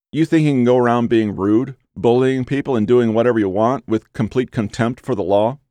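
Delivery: ordinary delivery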